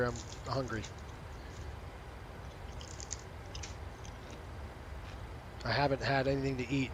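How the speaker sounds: half-whispered, breathy, chewing between words. Eating during a group call, chewing while talking. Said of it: "Sorry if I'm chewing in everybody's ear".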